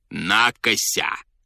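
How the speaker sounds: contemptuous, scornful tone. Narrator reads the general's retort to the man who burst in, with contempt. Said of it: "сказал генерал с презрением".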